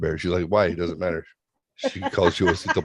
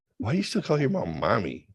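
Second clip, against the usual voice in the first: teasing, mocking, scornful jeer; 4 semitones higher, 6 dB quieter than usual. Retelling own past words while mocking a spouse: mocking someone. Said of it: "I mocked Elisa for our entire marriage".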